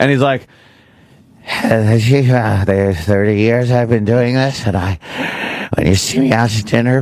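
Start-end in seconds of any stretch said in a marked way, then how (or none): 1.5-7.0 put-on airy, breathy death rattle voice. Imitating how Andy Rooney talked, Andy Rooney death rattle voice. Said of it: "when he talked like this".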